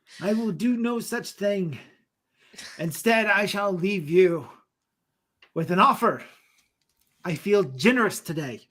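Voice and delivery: dragon character voice. Voicing the dragon calling from the cave to adventurers, in a dragon voice. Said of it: "the dragon that you so desperately hunt".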